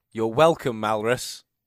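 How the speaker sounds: very loud, booming, projected speech. A role-player voicing their character after the staff run out screaming, speaking very loudly. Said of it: "very loudly speaking".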